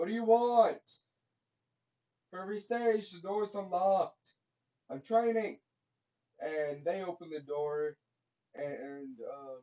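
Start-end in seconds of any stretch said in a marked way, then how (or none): 0.0-5.6 yelling, higher and louder. Retelling a scene where a character answers a knock at the door: screaming. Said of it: "Naruto just screams".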